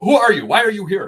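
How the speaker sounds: put-on loud, thick Eastern European accent, laid on. Retelling a guy who comes in the door questioning the speaker, heavy eastern european accent. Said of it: "heavy Eastern European accent".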